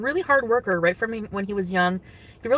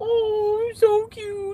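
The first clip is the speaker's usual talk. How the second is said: very high, teasing, mocking pet-talk voice; 12 semitones higher than usual. Retelling a man mimicking how the speaker talks about a cat: mocking pet-talk voice. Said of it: "And he was like imitating me".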